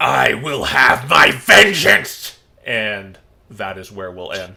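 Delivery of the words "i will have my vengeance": very domineering, commanding dragon voice, loud and rasping. Voicing an ethereal dragon rising from a corpse: domineering dragon voice. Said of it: "very domineering".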